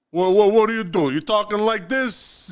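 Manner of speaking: Italian-sounding man's voice. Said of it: "Is that the Italian sounding man?".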